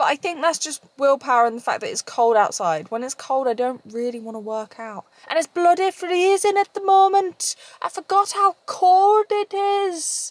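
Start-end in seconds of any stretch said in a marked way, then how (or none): 5.3-10.3 bad, very high, slow, unconvincing Scottish accent. Talking about skipping workouts in the cold, bad Scottish accent. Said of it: "I don't know where the Scottish accent come from".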